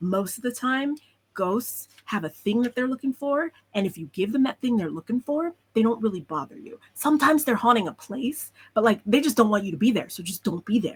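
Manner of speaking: secretive, conspiratorial whisper. Voicing a character who warns a child about ghosts: conspiratorial whisper. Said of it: "whispering very conspiratorially with you".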